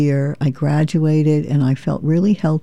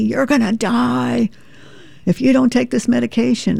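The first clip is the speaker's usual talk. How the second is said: rasping, put-on screaming; 8 semitones higher than usual. Quoting a neurologist who screamed about stopping medication, mimicking a screaming neurologist. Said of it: "this one guy was screaming at me".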